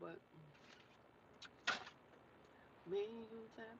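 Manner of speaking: whispered while chewing, mouth full of food. Talking to viewers while eating, talking while chewing. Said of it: "I'm no sorry if I'm chewing like a cow".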